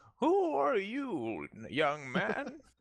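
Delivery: put-on very high, slow, sing-song old man voice. Player retelling what a character said on their return to the crypt, old man voice. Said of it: "This is why you should do character voices".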